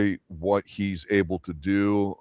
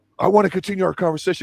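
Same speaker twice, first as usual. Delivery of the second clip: put-on very high, shrill, loud shouting; 11 semitones higher, 5 dB louder than usual. Retelling a film scene where a character yells at her: imitating someone yelling. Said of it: "when he's yelling at her".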